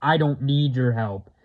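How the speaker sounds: put-on demonic voice. Retelling an exchange between Ed and a possessed girl, in Bill's demonic voice. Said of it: "in his demonic voice".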